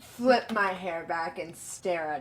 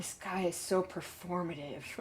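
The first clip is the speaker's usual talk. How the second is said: soft mutter, half under the breath; 3 semitones lower, 8 dB quieter than usual. Voicing Batman reacting to Vlad with an eye roll: muttering under his breath. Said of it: "mutters under his breath".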